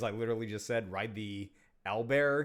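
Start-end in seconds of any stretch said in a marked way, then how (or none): none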